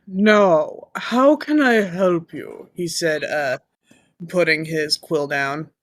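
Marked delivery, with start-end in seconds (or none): 0.2-2.7 put-on orc character voice. Voicing an orc who answers the adventurers: Tim Curry voice. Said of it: "I love your Tim Curry".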